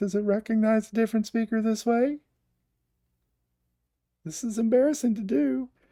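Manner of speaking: voice pitched way up. Testing whether a device recognizes a different speaker, talking in a much higher voice. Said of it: "talked in a in a much higher voice".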